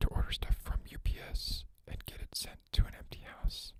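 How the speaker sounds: whispered speech. Telling a story about a past prank, whispering so nobody hears. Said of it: "I'm whispering this so nobody hears this".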